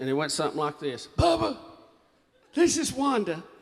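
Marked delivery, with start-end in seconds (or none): 1.2-3.4 scratchy, high-pitched voice. Retelling a phone message left by Wanda: Wanda's scratchy voice. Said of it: "Had that scratchy voice".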